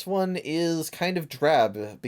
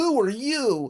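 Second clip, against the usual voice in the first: very high, bland, plain-sounding voice; 11 semitones higher than usual. Describing a cutscene, quoting a character in the whitest voice imaginable. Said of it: "in the whitest voice imaginable goes".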